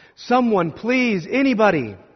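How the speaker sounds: high, loud hollering call. Trapped people keep calling out for anyone to hear them, hollering. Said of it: "they just keep hollering".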